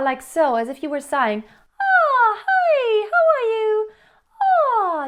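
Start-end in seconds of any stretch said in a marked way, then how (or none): 1.8-5.1 high, relaxed head voice. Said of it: "just very relaxed".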